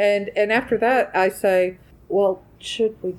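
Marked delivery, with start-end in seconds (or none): 2.1-3.1 muttered under breath. Retelling an aside muttered to the other players during a game, under breath. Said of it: "this is more under my breath to you guys".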